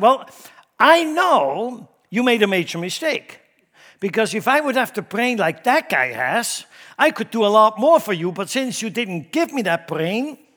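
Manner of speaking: put-on complaining voice.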